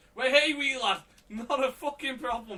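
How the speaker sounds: fake Geordie accent, pitched high. Retelling a phone call, the speaker quotes the man's reply in a Geordie accent. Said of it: "It's Geordie".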